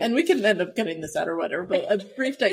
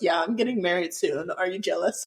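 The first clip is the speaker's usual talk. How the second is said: ordinary talk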